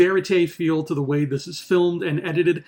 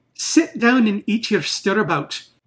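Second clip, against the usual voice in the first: heavy, broad, thick Irish brogue, laid on; 3 semitones higher than usual. Quoting a line from a fantasy book about a leprechaun, in a thick Irish brogue. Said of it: "say them in a thick Irish brogue".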